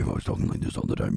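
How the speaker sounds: put-on deep voice. Told their voice is deep, the speaker shows what deep really sounds like: very deep voice. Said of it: "Deep would be like".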